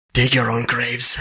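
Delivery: muttering under the breath. Narrating a scene, a character glances back and mutters under his breath. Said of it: "under his breath he just says".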